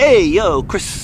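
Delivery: very loud, high, put-on Italian accent. Asked to let someone hear an italian accent, the speaker shows one. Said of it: "Let me hear an Italian accent".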